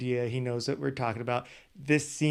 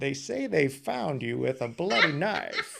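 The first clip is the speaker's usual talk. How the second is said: creepy voice with a creaky edge. Imitating a TV interviewer's creepy way of questioning people: Keith Morrison interview voice. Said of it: "it sounds so creepy".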